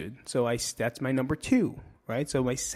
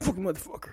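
angry muttering, whispered, cursing tone; 6 semitones higher, 4 dB quieter than usual. Showing how walking around angry sounds: demonstrating an angry mutter. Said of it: "that's angry".

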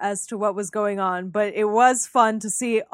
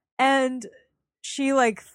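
ordinary talk

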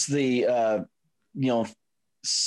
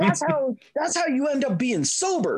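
mock scream, higher pitch; 13 semitones higher than usual. Retelling show characters screaming at the lady who baked brownies: imitating screaming. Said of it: "they were screaming at the lady who baked it".

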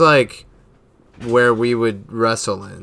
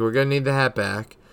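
usual speaking voice

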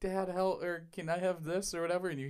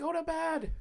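put-on, very high, yelling motherly voice; 13 semitones higher than usual. Retelling how a mom yelled down at her gaming kids: imitating a mom yelling. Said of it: "their mom yelling down at 'em".

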